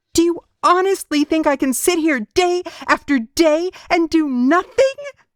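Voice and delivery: tearful, very high, loud desperate cry. A woman in a story cries out to the man, crying out. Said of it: "[name] and their unborn son. / she spat through gritted teeth. / she demanded tearfully".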